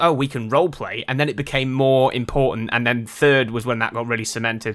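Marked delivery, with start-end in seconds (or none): none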